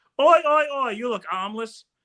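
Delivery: put-on drawn-out Aussie bloke accent, slow and high. Telling a joke about an Australian driver stopping for a man needing a ride: put-on Australian accent. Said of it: "is that how my accent sounds like what you did".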